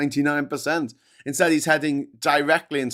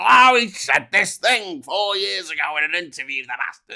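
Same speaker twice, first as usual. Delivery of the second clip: mock-outraged, angry voice, slower; 3 semitones higher, 3 dB louder than usual. Acting out people who hate a man over an old interview, mock-angry hater. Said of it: "people who proper fucking hate him and they go".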